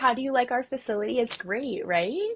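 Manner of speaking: polite, high customer service voice. Retelling greeting a visitor at work: customer service voice. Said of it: "my customer service voice".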